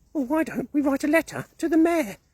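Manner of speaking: squeaky voice, very high pitch. Reading a story aloud, voicing Mouse's line to the other animals: squeaky Mouse voice. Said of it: "squeaked Mouse".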